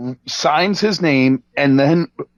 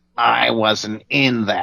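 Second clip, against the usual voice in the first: low, slow, drawn-out cartoon squid voice; 4 semitones lower than usual. Retelling a man's words while holding out cash for a VHS signing: Squidward voice. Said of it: "he says in Squidward's voice".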